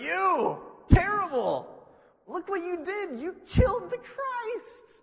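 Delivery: booming, very loud, very high, very slow, drawn-out yell. Retelling how Peter turned on everybody, imitating Peter yelling. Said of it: "he starts yelling at everybody".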